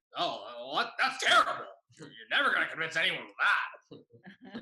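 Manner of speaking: high, loud, guttural teacher voice.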